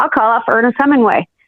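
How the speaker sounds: plain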